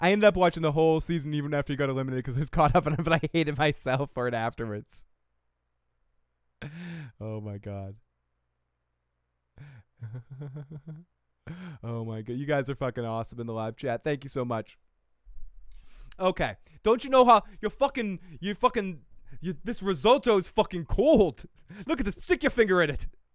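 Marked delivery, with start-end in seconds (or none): 16.8-23.1 failed attempt at British chef accent, higher, louder. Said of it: "I can't do a Gordon Ramsay accent".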